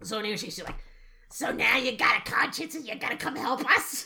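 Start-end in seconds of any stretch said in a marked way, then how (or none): 1.3-4.0 fake rough, raspy tone. Retelling a scene, the speaker plays an actress's line, imitating a raspy smoker's voice. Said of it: "She sounds like she has gargled with Drano".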